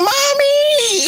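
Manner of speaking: very high-pitched crying like a dog. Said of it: "They like".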